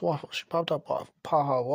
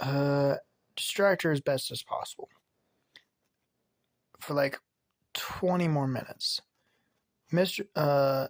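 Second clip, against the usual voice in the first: usual speaking voice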